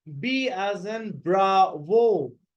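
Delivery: slow, careful, spelled-out letter pronunciation.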